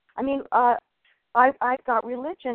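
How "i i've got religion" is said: normal talking voice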